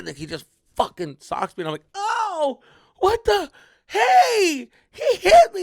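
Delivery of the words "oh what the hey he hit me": put-on very shrill, very loud, drawn-out crybaby whine. Retelling getting punched during a corner kick, whining like a crybaby. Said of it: "like a fucking llorón".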